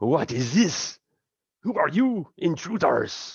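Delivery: high-pitched, non-gruff chef character voice. Storyteller voicing a chef who walks in and sees the listeners: chef character voice. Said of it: "and goes".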